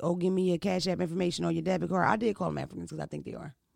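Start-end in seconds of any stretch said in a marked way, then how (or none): none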